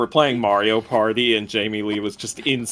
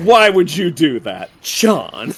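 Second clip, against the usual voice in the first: stern scolding tone, raised and swooping pitch; 6 semitones higher, 7 dB louder than usual. Retelling how an actress scolded the director on a commentary: imitating a stern lecturing mom voice. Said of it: "this stern, lecturing mom kind of voice".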